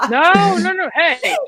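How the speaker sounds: laughing while speaking.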